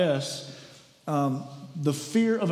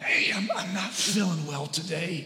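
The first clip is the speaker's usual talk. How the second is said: put-on, fake sick, poorly voice. Phoning in an hour before work, putting on a fake sick voice. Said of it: "You ever use the sick fake voice?".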